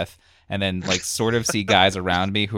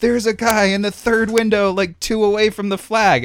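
shrill, very high-pitched, loud screaming voice; 14 semitones higher, 7 dB louder than usual. Retelling what a guy next to him screamed during the firing; retelling a guy screaming. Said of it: "screaming like".

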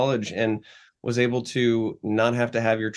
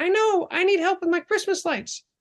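put-on sweet, cute, tiny old-lady voice, very high. Retelling how a neighbor asked him for help, in Mrs. Calgucci's cute little old voice. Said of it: "in her cute little old voice".

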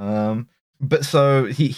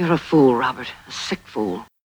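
menacing villain voice. In a film scene, she confronts Robert: evil voice. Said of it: "uses the evil voice".

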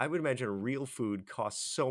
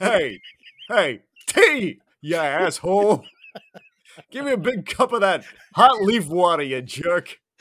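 booming, slow, drawn-out bellow, pitched up; 7 semitones higher, 14 dB louder than usual. Mocking how a captain orders tea from the replicator: Picard impression. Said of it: "that's a good Picard impression".

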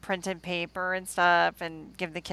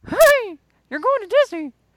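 very high, very loud, squeaky cartoon mouse voice; 11 dB louder than usual. Pretending to be a parent telling kids about a trip, in a disney cartoon mouse voice. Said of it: "like a minute I'm what Mouse?".

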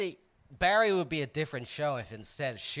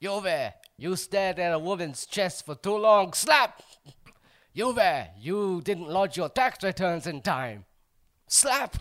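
threatening, menacing tone; 3 semitones higher, 3 dB louder than usual. Playing a character called Slappy Greek Man: playing Slappy Greek Man character. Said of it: "I'm Slappy Greek man".

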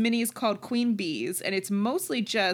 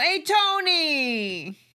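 high, loud shouting, one word stretched out; 7 semitones higher, 5 dB louder than usual. Explaining a voice used a moment ago: shouty tony voice. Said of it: "I was starting to do a Tony thing".

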